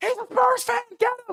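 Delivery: play-acted shrill, very high, loud crowd scream. Speaker recounting riding a bike past street crowds: retelling a screaming crowd. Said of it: "They're screaming at other packs in the street".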